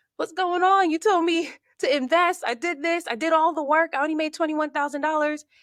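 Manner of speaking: anguished, high, loud crying plea.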